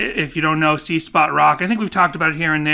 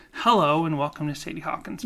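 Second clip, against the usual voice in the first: imitated soft asmr-style voice, quieter; 5 dB quieter than usual. Imitating how Jessica opens the podcast: imitating Jessica's ASMR hello. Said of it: "you do an A S M R hello".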